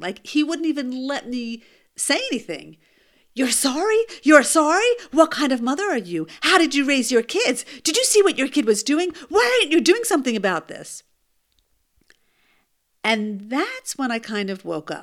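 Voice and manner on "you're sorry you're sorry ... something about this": loud, high, angry, berating screaming tirade. Retelling how a man charged over and screamed at her: imitating a man screaming. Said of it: "This guy was screaming at me".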